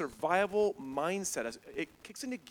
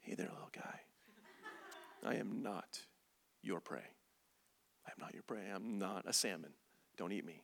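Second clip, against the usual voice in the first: very quiet, soft, gentle, flat monotone murmur; 8 semitones lower, 12 dB quieter than usual. Demonstrating how to speak to a bear, soft monotone voice. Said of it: "speak in soft, monotone voice".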